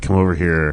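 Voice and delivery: hushed muttering under breath. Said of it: "like, under his breath".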